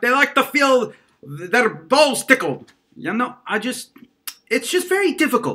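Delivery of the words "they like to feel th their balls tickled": put-on Scottish accent, stumbling delivery. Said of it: "I start talking like a Scotsman".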